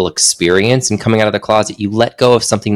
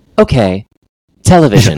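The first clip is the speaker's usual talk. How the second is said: mock automated phone menu voice, louder; 5 dB louder than usual. Retelling a call to a phone company: imitating automated phone robot. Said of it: "I get so angry at the robot".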